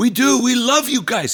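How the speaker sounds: put-on very high-pitched, yelled German accent. Retelling what one man yelled back at them, in a German accent. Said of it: "He's got his German accent".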